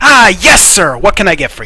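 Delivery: stone-cold serious tone. A game master voices a character answering a player, stone-cold serious. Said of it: "with like stone cold seriousness".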